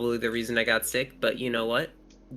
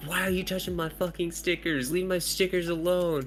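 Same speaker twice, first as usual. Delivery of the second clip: put-on, high, mild half-yell; 6 semitones higher than usual. Retelling how one student yelled at another over stickers: imitating a student yelling. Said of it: "yelling at him".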